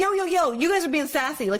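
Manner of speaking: high-pitched, loud scolding tone.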